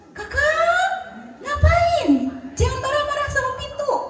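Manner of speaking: high, loud, startled yelling.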